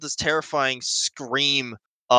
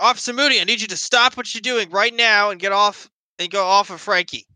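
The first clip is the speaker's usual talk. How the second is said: basically yelling, shouted and high-pitched; 9 semitones higher than usual. Voicing a character ordering an officer off Frankie: yelling. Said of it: "basically yelling".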